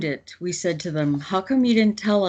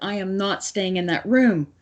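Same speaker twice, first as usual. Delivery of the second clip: put-on panicked, frantic speech; 2 semitones higher than usual. Retelling the boss refusing to go back to her room: imitating panicked speech. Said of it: "my boss is panicking".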